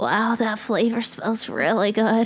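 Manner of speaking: slow dog voice.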